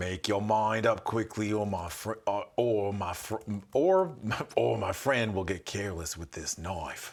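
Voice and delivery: put-on vaguely Australian accent. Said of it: "I just make them vaguely Australian".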